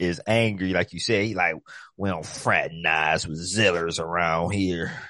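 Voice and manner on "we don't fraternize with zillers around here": put-on southern cartoon voice. Voicing Ancient Kong in a conversation, doing an Uncle Ruckus voice. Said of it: "Why y'all gotta have the Uncle Ruckus voice though?".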